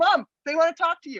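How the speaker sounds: put-on loud, high-pitched calling-out yell. Retelling calling across the rink to their mother: imitating yelling. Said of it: "We'd be yelling".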